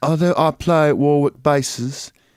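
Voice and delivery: slow, regal British accent. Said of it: "Do a regal, uh, British accent".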